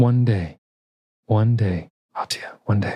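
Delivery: struggling to hold back tears, trying to sound strong. Voicing a father answering his daughter as he carries her out: holding back tears. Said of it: "trying to look strong for his daughter, but he's struggling".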